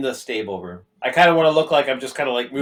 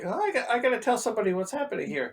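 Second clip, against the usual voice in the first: very high, loud muttering to self; 10 semitones higher, 6 dB quieter than usual. As more figures come around the corner, a character speaks for anyone to overhear: muttering loudly to oneself. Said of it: "I just kind of mutter loudly to myself".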